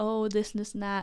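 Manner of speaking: normal talking voice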